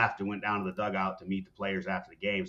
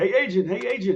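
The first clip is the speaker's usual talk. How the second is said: play-acted very high-pitched, loud yell; 12 semitones higher, 6 dB louder than usual. Retelling how an announcer called down to him: imitating someone yelling. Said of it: "he's yelling down to me".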